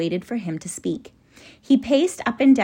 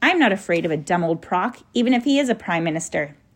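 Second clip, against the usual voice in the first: plain reading voice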